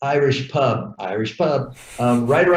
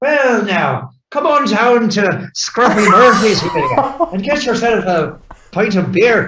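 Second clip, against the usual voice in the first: loud, badly faked Irish brogue; 8 semitones higher, 5 dB louder than usual. Improvising a quick commercial bit, spoken in a fake irish accent. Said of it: "I should have done it in my my fake Irish accent".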